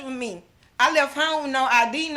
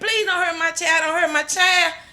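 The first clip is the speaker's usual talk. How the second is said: acted-out screaming and crying out; 3 semitones higher, 4 dB louder than usual. A mother recounts pleading for her child, retelling screaming and crying. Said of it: "I'm screaming and crying".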